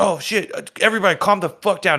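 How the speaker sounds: mock urgent voice. Retelling the team manager's reaction when the seasoning was missing: imitating an urgent voice. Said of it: "her urgency in her voice was hilarious".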